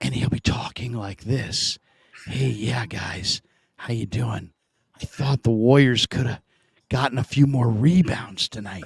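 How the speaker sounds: low, hushed stage whisper. Retelling how Hutch talks when calling the show late at night, imitating Hutch's whisper. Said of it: "why are you whispering?".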